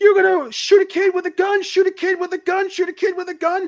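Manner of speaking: very high, full-lung, top-of-the-lungs screaming. Retelling how a scene partner screamed after action was called, imitating screaming at top of lungs. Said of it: "he's screaming at the top lungs".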